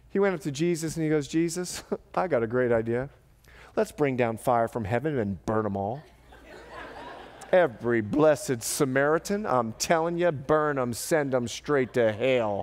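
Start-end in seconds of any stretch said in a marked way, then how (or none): 1.2-12.6 ranting in a put-on rural country accent. Retelling a story and voicing one man's suggestion, in a put-on country accent. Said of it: "Sorry for the country accent".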